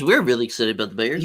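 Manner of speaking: put-on TV sports broadcaster voice. Joking about tailgating next week, the speaker puts on a fake sports media voice. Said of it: "in our fake media voice".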